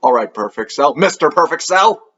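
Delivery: plain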